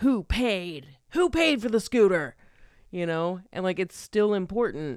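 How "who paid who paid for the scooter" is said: put-on yelling, pressing and urgent. Retelling a film's final confrontation scene: imitating Billie Jean yelling. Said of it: "yelling at him".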